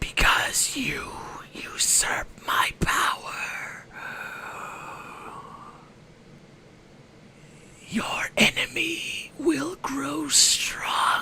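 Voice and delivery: breathy whisper, close to the ear. Storyteller voicing the Nightmare Lord whispering into the listener's ear: whispering villain. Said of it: "he whispers".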